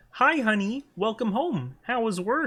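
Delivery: puppet voice pitched very high, a bit loud. Answering a viewer's redeem, practicing a Kermit the Frog voice. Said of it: "let me practice my Kermit".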